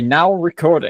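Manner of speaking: put-on slow, drawn-out, really American accent bot voice. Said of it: "in, like, a really American accent".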